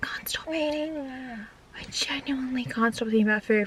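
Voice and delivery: hushed whisper. Narrating plans to grab food before picking someone up, whispering. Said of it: "Why am I whispering?".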